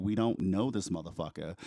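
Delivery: plain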